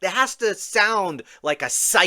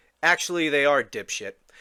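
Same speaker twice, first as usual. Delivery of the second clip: ordinary talk, nothing marked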